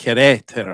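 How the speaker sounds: Querétaro with stress on second syllable ré. Explaining how to pronounce Querétaro, with stress on 'ré' in Querétaro. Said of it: "it's like an emphasis on the second e".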